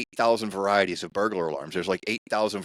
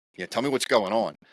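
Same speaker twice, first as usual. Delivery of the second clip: plain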